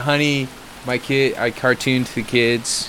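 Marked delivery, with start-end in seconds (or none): none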